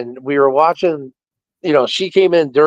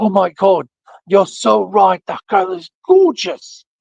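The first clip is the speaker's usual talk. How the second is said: put-on strong, thick British accent, higher pitched; 6 semitones higher than usual. Retelling what a nurse said about a girl, in a heavy British accent. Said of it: "she had a heavy British accent".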